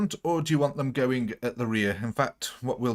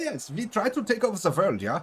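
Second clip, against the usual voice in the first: put-on stock German accent, pitched up; 8 semitones higher than usual. Explaining the nickname, the speaker repeats Pinky's line as Pinky in a German accent. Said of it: "Don't know why he came out German then".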